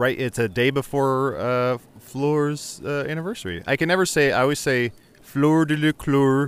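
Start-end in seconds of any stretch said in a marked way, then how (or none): 5.2-6.5 put-on faux-Swedish accent. Saying Fleur's name the way she always does, Swedish Chef impression. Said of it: "I say it like the Swedish chef".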